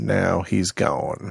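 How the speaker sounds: soft, rough, creaky put-on voice. Talking about a gnat in the office, a Morgan Freeman impression. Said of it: "That's my impression of Morgan Freeman. It's very bad".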